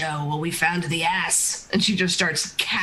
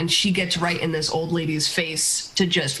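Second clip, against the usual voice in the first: ordinary delivery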